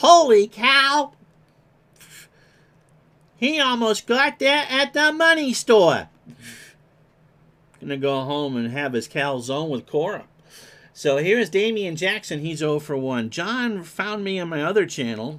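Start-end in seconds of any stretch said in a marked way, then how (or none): 0.0-10.2 swooping, animated, big ballpark-style announcer delivery. Calling a baseball game, doing a Phil Rizzuto impression. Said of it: "Was that my Phil Rizzuto impression?".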